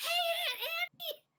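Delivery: very high, very loud shrieking scream. Retelling how someone immediately called out to an aunt: retelling a scream. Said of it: "immediately screams out".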